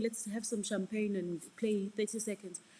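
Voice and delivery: ordinary talk, nothing marked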